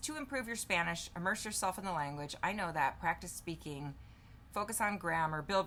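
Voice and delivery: ordinary talk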